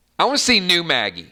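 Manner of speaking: usual speaking voice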